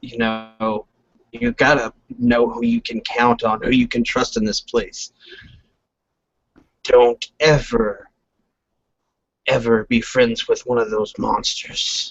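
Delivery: grave, deadly serious tone. A lizard character speaks while looking into the listener's eyes: very serious. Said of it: "And he's very serious at this moment as he's looking into your eyes".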